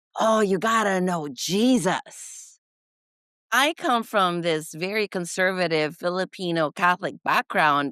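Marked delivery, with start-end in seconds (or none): 0.2-2.6 earnest, slow, charismatic, larger-than-life preacher delivery. Retelling how a charismatic pastor talked: imitating a pastor's talk. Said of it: "this is how he would talk".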